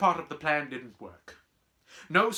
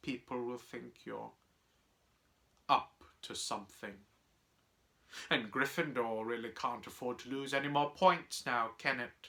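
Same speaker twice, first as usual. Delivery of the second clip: plain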